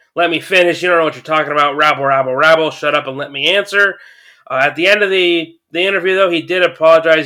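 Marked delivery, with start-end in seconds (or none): none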